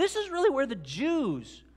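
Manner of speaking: overexcited voice cracking, one word drawn out. Speaking about faith and sin when the voice cracks. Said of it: "I think my voice just cracked there".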